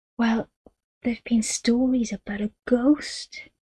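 whispering. Narrating a girl answering Madge's sharp question, continuing in a whisper. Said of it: "continued in a whisper".

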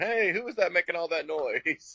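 high mock holler. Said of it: "he's hollering".

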